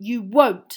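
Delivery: very loud, sharp, snapped delivery. Ron retorts to Hermione after she speaks to her cat; snapping. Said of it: "snapped Ron".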